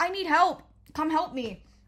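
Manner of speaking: half-voiced call, like a yell. Retelling yelling out the door to other teachers: imitating a yell for help. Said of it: "once I yelled out the door".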